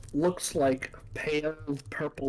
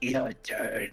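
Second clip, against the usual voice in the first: rough, rasping, raspy delivery; 2 semitones lower, 3 dB quieter than usual. Retelling what another player said, imitating a raspy voice. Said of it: "a raspy voice".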